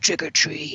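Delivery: really creepy, eerie, menacing voice. Retelling a movie scene, a voice outside a window: imitating a really creepy voice. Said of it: "a really creepy voice outside of his window".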